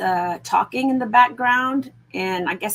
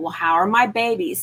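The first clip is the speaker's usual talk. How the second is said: tearful, crying voice. Retelling waking after surgery and asking the nurses: retelling own crying question. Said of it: "And I'm crying".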